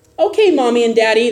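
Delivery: put-on sugary, sweet, obedient little-kid voice. Acting out children answering a parent's order to clean up, in a mock-nice voice. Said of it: "They might even say it with a nice voice".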